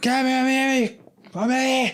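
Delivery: acted shouting. Acting out a man getting out of the car at aliens, retelling a shout. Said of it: "he starts shouting".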